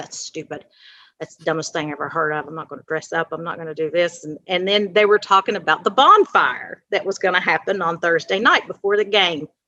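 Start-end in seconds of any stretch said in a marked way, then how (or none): 0.0-4.2 low muttered griping under the breath. Retelling a student's complaints about homecoming announcements: imitating a murmur under her breath. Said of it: "she would murmur under her breath".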